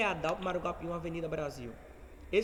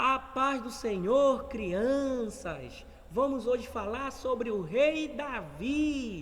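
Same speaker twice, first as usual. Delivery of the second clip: put-on very slow, high, raised child-directed teaching voice; 6 semitones higher, 4 dB louder than usual. Showing how the voice changes telling Bible stories to children: child-directed tone. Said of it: "mas com criança, ... o meu tom de voz muda".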